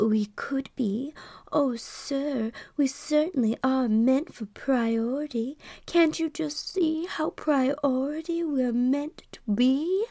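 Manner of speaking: high, cooing, purring screen-siren voice. Retelling an answer to a man asking about priority: Norma Jean voice. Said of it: "I turned into Norma fucking Jean".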